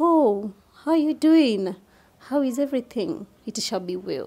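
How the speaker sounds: soft, soothing, calming tone. Showing the tone that counseling needs, in a soothing tone. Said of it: "A soothing tone".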